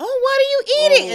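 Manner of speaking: shrill, very high, loud, nosy busybody butting in. Complaining about a coworker who always asks about their food, imitating a nosy coworker. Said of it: "she walks by and she comes".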